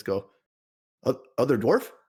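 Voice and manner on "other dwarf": put-on, high, keenly curious, probing, inquisitive tone. Recounting what he says to someone in a scene, very inquisitive. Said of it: "in a very inquisitive voice".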